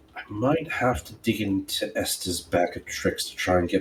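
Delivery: low-voiced aside. In a tabletop game, Lady Julia turns to Oof: low voice. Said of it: "in a low voice".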